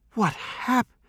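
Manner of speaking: very high gasped voice. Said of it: "she gasped".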